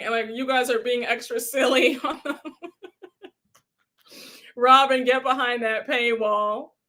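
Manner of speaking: speech broken up by laughter. Reading chat comments aloud, delirious and tired: laughing while talking. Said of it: "so I cannot stop laughing".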